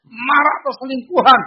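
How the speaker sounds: high loud outcry.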